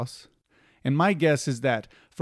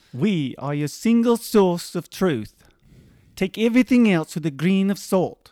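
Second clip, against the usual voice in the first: New Zealand accent, pitched up; 5 semitones higher, 4 dB louder than usual. Asked if they can do a Kiwi accent, speaker tries a New Zealand accent. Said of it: "Can you do a Kiwi accent?".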